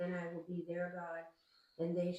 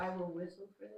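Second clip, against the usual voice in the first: ordinary talk, nothing marked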